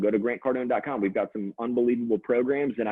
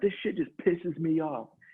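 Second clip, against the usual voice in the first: mock-angry put-on voice, higher pitch; 5 semitones higher than usual. Retelling what a man said, mad about the fork in the sink, mock-angry rant. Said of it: "he's so mad about it".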